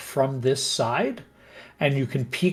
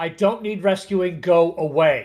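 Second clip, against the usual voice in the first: irritated, angry shout; 4 semitones higher, 3 dB louder than usual. A game master voices someone behind a stuck door refusing rescue, angry voice. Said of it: "there's somebody up here and they're angry".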